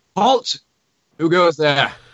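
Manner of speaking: stern voice calling out, high pitch. A voice calls out to approaching travelers; stern voice calling out. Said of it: "a stern voice call out".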